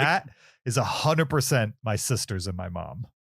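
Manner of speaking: usual speaking voice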